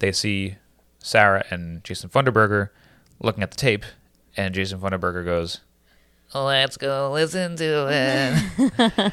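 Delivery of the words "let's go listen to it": put-on high teen voice, very slow, every word stretched. Narrating a game scene, giving one character's line in a Jason Funderburker voice. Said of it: "You're too good at his voice".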